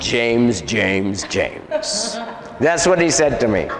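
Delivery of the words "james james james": put-on deep, swooping man's voice. Retelling what the one he was casting out said to him, in a deep man's voice. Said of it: "he was talking like in a deep man's voice".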